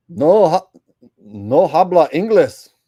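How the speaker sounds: put-on Mexican accent. Answering a request to pretend to be a mexican who can't speak english. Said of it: "pretend I'm a Mexican who can't speak English".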